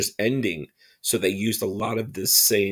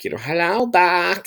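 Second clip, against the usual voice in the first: weird kitty voice, much higher and louder; 9 semitones higher, 5 dB louder than usual. Recalling how an actor on the Buck Rogers show sounded, Bob Elia weird kitty voice. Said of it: "sounded like a weird kitty".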